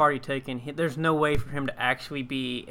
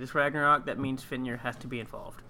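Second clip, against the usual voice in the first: normal talking voice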